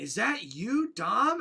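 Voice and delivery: put-on confused voice. Retelling a backstage segment: imitating a confused R-Truth. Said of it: "confused as hell".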